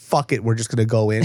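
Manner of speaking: ordinary delivery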